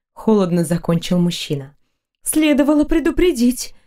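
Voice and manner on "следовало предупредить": clearly agitated, pitched-up, reproachful tone. A girl answers the man's cold explanation, speaking with obvious agitation. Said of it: "проговорила девушка с явным волнением".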